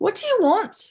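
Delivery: put-on Irish accent, voice up high. Retelling what an Irish woman said at her door, put-on Irish accent. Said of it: "she spoke in this Irish accent".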